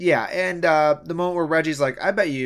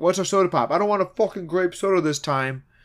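put-on Minnesota accent; 3 semitones higher than usual. Retelling what the players say to the coach: imitating a stereotypical accent. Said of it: "doing that, like, stereotypical, like, accent".

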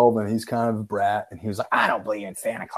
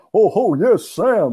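very high, loud, belted put-on voice; 9 semitones higher, 7 dB louder than usual. Answering a phone call meant for Santa Claus and talking to the kid in a Santa Claus voice. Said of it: "I play the voice".

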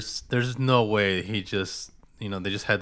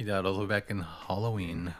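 normal talking voice

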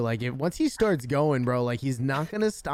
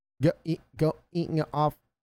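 mock glitchy, lagging robot voice, higher pitch; 3 semitones higher than usual. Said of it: "literally sounded like a robot".

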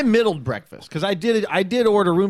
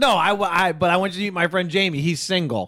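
ordinary talk

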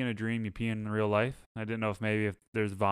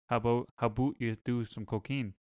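imitated Mexican accent. Acting out the dream man again: imitating a Mexican accent. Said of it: "Still c-, Mexican".

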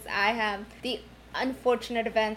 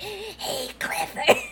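put-on smoker's voice, pitched up; 8 semitones higher than usual. Retelling a scary character from the English dub; imitating a smoker's voice. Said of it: "like, a smoker's voice. She was like".

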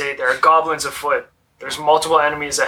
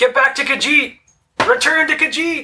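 acted, very high, loud shout carrying far; 12 semitones higher than usual. Calling a companion back while holding a shot: yelling in character. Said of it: "I'm yelling into the room".

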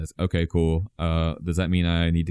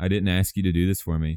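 imitated flat, deadpan delivery. Retelling what a character says to another: imitating a deadpan delivery. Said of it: "And she's just saying".

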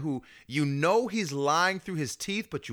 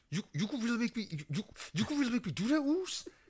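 put-on gritted-teeth voice, higher and quieter; 7 semitones higher, 7 dB quieter than usual. Retelling a tense scene with Jay: imitating Jay talking through his teeth. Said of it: "when he was just talking through his teeth".

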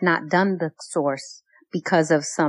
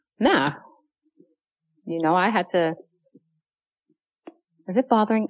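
speaking through a mouthful of food. Answering a question while eating cashews, talking while chewing. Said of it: "I'm chewing. Can you hear me chewing?".

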